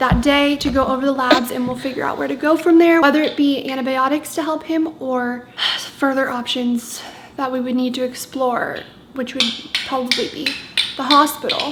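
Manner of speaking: ordinary delivery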